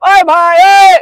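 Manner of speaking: very loud, very high, throat-driven yell. Repeating the dialogue to show the voice change: shouting from the throat. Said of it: "गले से".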